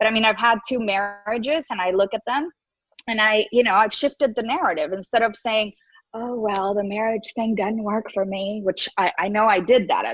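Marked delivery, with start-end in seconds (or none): 6.1-8.6 put-on Southern accent. Quoting own past words about marriage: southern accent. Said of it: "you have a Southern accent".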